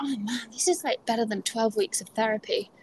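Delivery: muttered under breath. Quoting what one participant said during the moment, retelling an under-breath remark. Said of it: "just under her breath".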